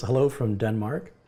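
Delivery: ordinary delivery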